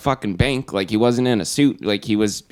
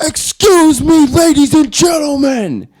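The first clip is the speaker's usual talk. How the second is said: shrill, very high, very loud, drawn-out scream; 8 dB louder than usual. Retelling how a rough-looking man addressed the room: imitating a man screaming. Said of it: "He screamed".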